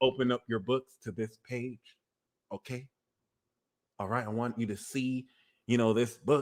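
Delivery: very calm, quiet preacher-like voice. Describing how a preacher starts off, imitating a calm preacher. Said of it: "The preacher be starting off mad calm".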